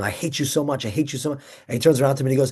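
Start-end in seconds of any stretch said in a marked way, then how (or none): none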